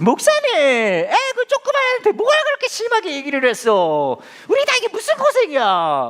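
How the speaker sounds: high-pitched, loud, chiding voice.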